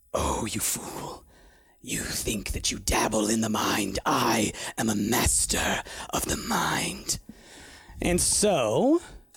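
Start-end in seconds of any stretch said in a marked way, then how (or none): 0.1-7.1 deep dragon character voice. Voicing a dragon speaking into a player's head: dragon voice. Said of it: "of his voice in your head, uh, and he says".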